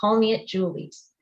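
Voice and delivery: ordinary talk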